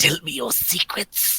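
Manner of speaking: eerie, creepy, little lurking creature voice. A player voices a character clutching a pendant, in a Gollum voice. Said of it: "It's going to be my new character voice".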